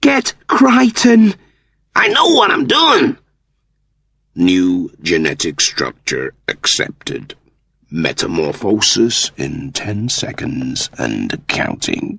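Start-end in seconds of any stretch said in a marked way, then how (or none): 4.4-12.2 low, mechanical computer announcer voice. Reading a story, the computer accepts the structure and counts down: computer voice. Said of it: "A computer throbbed into being. / A computer throbbed into being. Transmogrification sequence initiated. Gene sample accepted and cloned".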